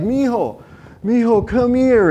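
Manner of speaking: acted, tearful, weeping voice calling out. Retelling a father's words to his son in the front yard: imitating a crying father. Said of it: "and he's crying".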